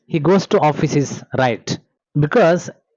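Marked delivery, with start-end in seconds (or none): none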